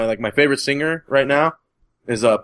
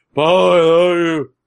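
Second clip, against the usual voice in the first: mock manliest voice, as loud as possible; 3 semitones higher, 4 dB louder than usual. Retelling a shout in a crowd that everyone heard; loud manly yell. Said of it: "in the manliest, loudest voice I can do".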